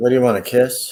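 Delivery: ordinary delivery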